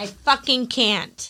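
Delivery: irritated outburst. Speaker reacting to a story about a baby being woken, irritated. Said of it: "I just got all irritated".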